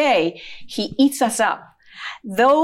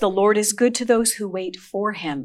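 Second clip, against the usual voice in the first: usual speaking voice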